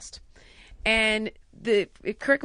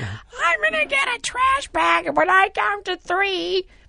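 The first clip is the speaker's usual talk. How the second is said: put-on child voice, higher and louder; 10 semitones higher, 5 dB louder than usual. Retelling how the kids impersonate the speaker: retelling kids' impression of me. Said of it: "It's really funny when they do me".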